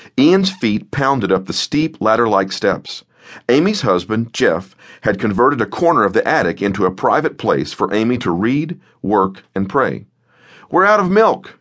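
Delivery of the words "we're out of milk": out-of-breath panting and gasping, very high voice. [name], just up the steep attic steps, tells Amy, panting. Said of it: "[name] panted".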